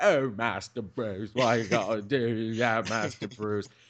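whiny, blubbering, sobbing, fake-crying butler voice. Mocking how other Batman books write the butler: mock-crying Michael Caine Alfred. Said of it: "he's crying Alfred".

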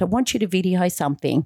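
ordinary talk, nothing marked

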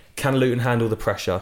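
ordinary delivery

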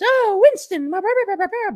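put-on female voice at a very high pitch. Recalling a shtick couple, acting out the wife's line in a put-on female voice. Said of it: "I can't do a female voice".

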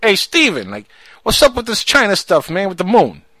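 New York accent. Showing the others how to ask the question, in a new york accent. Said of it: "You got to say it like you're from New York".

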